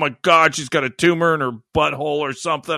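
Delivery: mock-scared reaction. Retelling a panicked reaction to hearing about a blackout: imitating own scared reaction. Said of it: "I got all scared".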